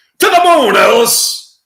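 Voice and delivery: mock shrill, very high, loud, slow yell. Acting out a Honeymooners scene yelling at his wife: yelled as Jackie Gleason. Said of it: "Jackie Gleason yelling at his wife".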